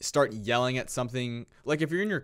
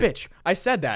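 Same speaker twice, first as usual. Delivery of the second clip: put-on yell, higher and louder; 6 semitones higher, 5 dB louder than usual. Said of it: "yelling at her".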